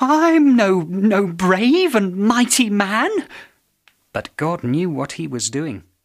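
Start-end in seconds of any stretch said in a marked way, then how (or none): 0.0-3.1 high, very slow, halting stammer. Narrator reads Gideon answering a call for his help: stammering. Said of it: "Gideon stammered".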